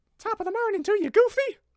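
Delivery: very high Irish accent slipping into squeaky cartoon-mouse voice. Attempting an Irish accent that keeps turning into Mickey Mouse. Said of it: "it's turned into Mickey Mouse again".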